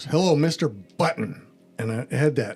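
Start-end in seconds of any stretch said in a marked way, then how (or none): 0.0-1.5 put-on authoritative, commanding official voice over loudspeaker. Retelling a phone call from a caller: imitating an authoritative voice. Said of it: "She had very authoritative command".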